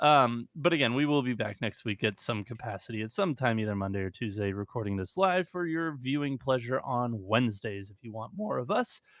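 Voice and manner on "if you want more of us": voice breaking mid-phrase. Host signing off to viewers at the end of the show, voice cracking. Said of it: "that was a fucking voice crack and a half".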